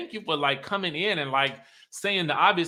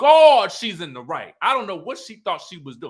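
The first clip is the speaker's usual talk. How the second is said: ordinary talk, nothing marked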